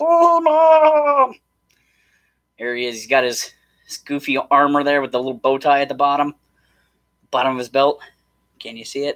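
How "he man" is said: very high, swooping, sing-song sea creature voice. Going through a set of figures, you announce He-Man: merman voice. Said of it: "I need my sea spray voice or merman voice".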